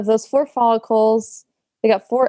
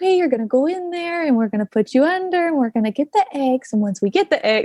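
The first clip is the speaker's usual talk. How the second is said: patient, step-by-step explaining tone; 4 semitones higher than usual. Retelling how the doctor at her egg retrieval explained every step: imitating patient explaining. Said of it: "very patiently explaining every little step".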